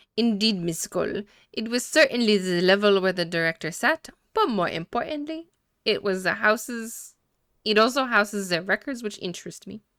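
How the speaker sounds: clumsy, bad put-on French accent. Voicing a character answering another character's question, in a bad French accent. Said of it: "Bad French accent".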